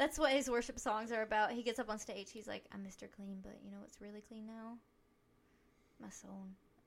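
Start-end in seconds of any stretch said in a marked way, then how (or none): 2.7-6.5 put-on mock-serious voice, quieter. Acting out Mister Clean on stage about his worship songs: mock-serious Mister Clean voice. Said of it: "You said that so seriously".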